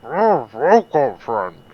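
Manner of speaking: muffled, talking through a mouthful of food. Chico greets a red-haired elf who sat down beside him, talking with mouth full. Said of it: "probably has his mouth full with a bite of food".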